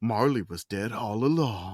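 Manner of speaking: very low, slow, drawn-out nineties movie trailer voice. Asked about doing a narrator, speaker shows off a nineties movie trailer voice. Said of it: "nineties movie trailer".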